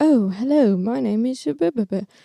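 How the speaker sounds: very proper, upper-class posh British English accent. Listing british accents, this one posh: posh british accent. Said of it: "posh is like".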